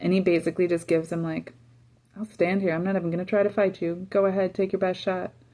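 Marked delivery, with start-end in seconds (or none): 2.2-5.3 put-on mocking voice, higher pitched. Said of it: "Goliath starts taunting him".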